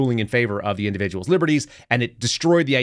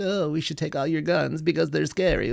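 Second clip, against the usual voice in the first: pitched-up, creaky put-on voice; 5 semitones higher, 4 dB quieter than usual. Mocking the government's call to take guns: Merrick Garland voice. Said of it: "That was my Merrick Garland voice".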